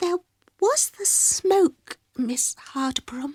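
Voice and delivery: tiny, very small, high little voice. A girl answers a woman's question, in a tiny voice. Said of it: "explained Mildred in a tiny voice".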